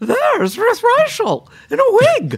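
very loud, very high sing-song swooping call. Retelling being called out from across a restaurant, loud Julia impression. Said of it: "said in her unmistakable Julia voice, very loud".

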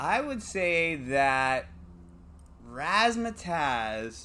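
slow, dramatic, drawn-out delivery. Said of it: "dramatic answer reveal".

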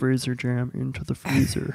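creepy horror-villain killer voice. Describing a grandmother's freezer jam method, in a Buffalo Bill voice. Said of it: "Buffalo Bill".

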